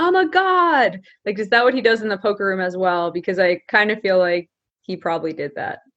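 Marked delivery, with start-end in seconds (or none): 0.0-1.0 very high, drawn-out shrieking scream, stretching "God". Speaker acts out a guy in a parking lot at 5 a.m., imitating someone screaming. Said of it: "when he's screaming".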